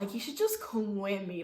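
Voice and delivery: normal talking voice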